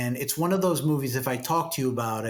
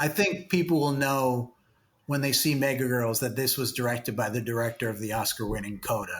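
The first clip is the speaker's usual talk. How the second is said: usual speaking voice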